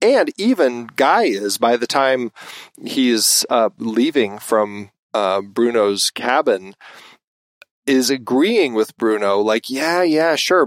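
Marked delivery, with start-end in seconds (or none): 9.7-10.6 mock, very sarcastic, high-pitched tone. Retelling a film scene, imitating Guy's sarcastic agreement. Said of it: "but in a very sarcastic way".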